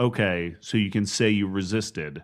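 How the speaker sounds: play-acted, very calm, cool and composed voice. Retelling a film scene where a man speaks to a woman: imitating a man speaking very calmly. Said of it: "he says very calmly".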